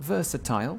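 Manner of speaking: "versatile" rhymed with "fragile", British style.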